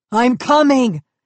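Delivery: loud gruff barnyard goat voice. Reading a story aloud, Valentino calls after the others in his gruff goat voice. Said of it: "He called in his gruff goat voice".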